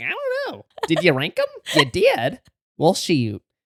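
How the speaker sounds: lively, animated co-host voice, swooping pitch. Mocking the other speaker for not reading the notes: imitating the other speaker. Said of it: "She's like".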